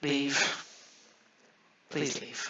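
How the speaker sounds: worn-out, breathy, sighing, pleading tone. Voicing a tired archivist who asks the party to go: weary sighing plea. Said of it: "kind of sighs, braces himself against the table".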